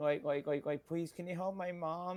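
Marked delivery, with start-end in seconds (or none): 0.9-2.2 put-on crying child voice, higher and quieter. Retelling a game scene, imitating young Aerith crying. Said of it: "a young Aerith just crying".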